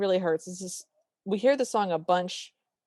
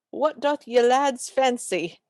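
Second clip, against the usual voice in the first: slow, try-hard, old-fashioned put-on British accent; 4 semitones higher than usual. Retelling a character's stage line: trying a British accent. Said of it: "she tries to do British".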